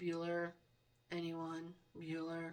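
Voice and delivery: dead flat, low voice. Comparing the room voice to a movie: monotone Bueller teacher voice. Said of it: "like the movie Bueller".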